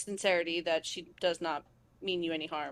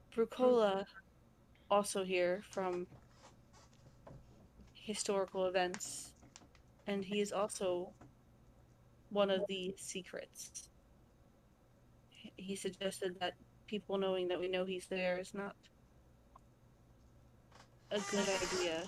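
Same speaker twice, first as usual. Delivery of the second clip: low-key, hushed, quiet confiding tone; 8 dB quieter than usual. In character, telling the group about Brucola, in a quiet voice. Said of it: "obviously in a quiet voice".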